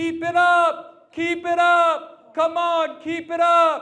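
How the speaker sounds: very high, very loud, very slow, drawn-out cheering yell. Retelling cheering for someone trailing in a donut contest, retelling a yelled cheer. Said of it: "So I start yelling".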